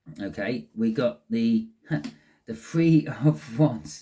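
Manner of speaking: loud, giggly, laughing lightly through the words. A tarot reader announces the next card, knowing what comes after: giggling. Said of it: "I'm giggling because I've seen what's coming".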